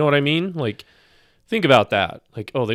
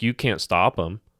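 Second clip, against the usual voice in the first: plain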